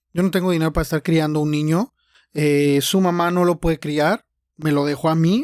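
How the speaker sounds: normal talking voice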